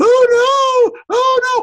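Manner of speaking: shrill, high, loud, very slow, stretched-out yelling. Mocking a safety rule for a slow shuttle carrying school children: yelling. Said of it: "I shouldn't be yelling that".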